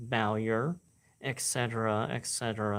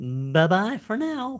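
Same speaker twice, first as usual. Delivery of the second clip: very high voice, breaking slightly; 10 semitones higher, 8 dB louder than usual. Signing off at the end of a recording, voice cracking a bit. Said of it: "voice crack a bit".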